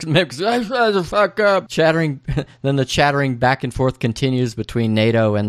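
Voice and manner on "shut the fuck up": high, slow put-on drunken yell. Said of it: "the drunk mimics".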